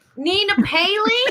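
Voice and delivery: put-on American accent. Repeating a guest's name after being asked: attempted american accent. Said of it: "with an American".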